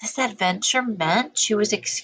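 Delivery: ordinary delivery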